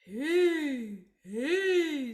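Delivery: put-on very loud, slow-witted, dopey old man voice. Speaker demonstrating a sound called old man voice, dopey old man voice. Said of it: "this one is called old man voice".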